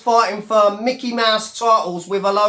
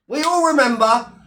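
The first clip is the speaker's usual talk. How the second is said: ordinary delivery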